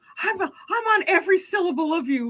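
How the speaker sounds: mock-doting, intent attentive tone. Mocking a woman on a date showing a man how intent she is, mimicking doting attention. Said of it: "she's like trying to show him how intent".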